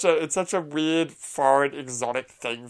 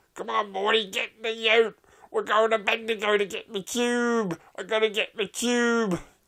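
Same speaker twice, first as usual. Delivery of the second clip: put-on Australian accent, much higher pitch; 8 semitones higher than usual. Quoting a line from a show after discussing accents, in Bush World Adventures Australian accent. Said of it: "Sorry, I can't help it".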